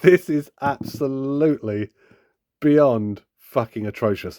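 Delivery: slow, laughing through the words. Giving harsh updated thoughts on a toy, laughing while talking. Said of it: "I keep making myself laugh".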